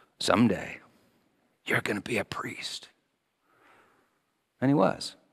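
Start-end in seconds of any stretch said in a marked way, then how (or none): 0.2-2.9 soft, hushed, tender, gentle whisper. Retelling a bishop speaking to an altar boy at Sunday Mass, retelling a gentle whisper. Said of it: "gently whispered to the boy".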